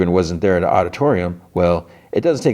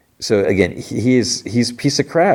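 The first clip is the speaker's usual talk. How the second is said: ordinary delivery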